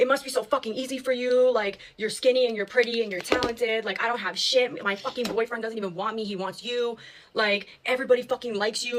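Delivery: put-on screaming rant. Retelling a friend screaming in her face: imitating a friend screaming. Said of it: "She starts screaming at me".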